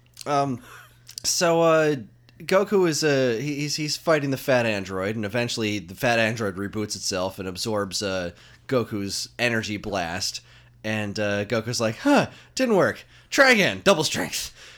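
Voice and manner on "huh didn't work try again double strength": very high, out-of-breath, winded voice. Retelling a cartoon fight scene, imitating a winded Goku. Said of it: "Goku's getting more and more winded".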